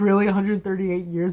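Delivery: normal talking voice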